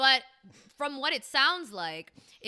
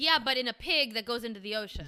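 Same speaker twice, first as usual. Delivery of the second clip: usual speaking voice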